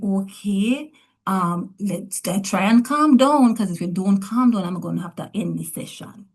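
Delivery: normal talking voice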